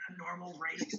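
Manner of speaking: gentle, soft, slightly high-pitched voice. Turning to the band in character: soft voice. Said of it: "in a soft voice".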